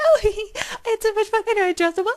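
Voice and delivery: very high, very loud smitten voice. Retelling a character's phone call, imitating Alice's high-pitched voice. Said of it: "her voice goes up, like, two octaves".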